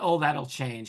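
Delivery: plain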